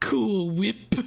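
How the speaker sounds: put-on British accent, pushed high and strained. Trying an accent the speaker admits being bad at: Stewie accent. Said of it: "in the Stewie accent".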